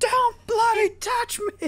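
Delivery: mock shrill, very high screaming outburst. Speaker quotes back the other person's scream from an old video, imitating a scream. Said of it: "the way how you screamed".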